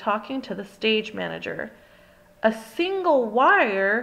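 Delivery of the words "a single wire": exclaimed, with "wire" long and drawn out. Narrator reads Miss Lily talking with the stage manager, exclaiming. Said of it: "exclaimed Miss Lily".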